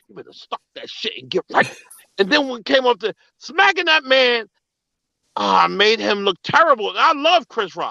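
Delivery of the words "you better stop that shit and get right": hushed, breathy, motherly whisper close to the ear. Retelling what a mother whispered in the ear: imitating mother whispering. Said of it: "she used to whisper in my ear".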